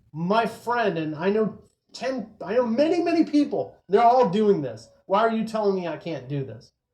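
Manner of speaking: exasperated, disbelieving, upset, indignant tone. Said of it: "they get very upset about this".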